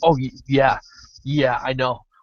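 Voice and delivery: meek, limp tone, slow and drawn out. Retelling Steven's reply to an amped-up Kimmy: imitating Steven as a yes man. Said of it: "is a yes man".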